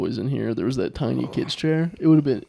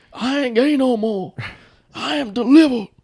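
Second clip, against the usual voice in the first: very high, slow, put-on preacher-style proclaiming voice; 11 semitones higher, 5 dB louder than usual. Imitating a man in a televised Baptist church: delivered churchgoer voice. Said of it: "your impression".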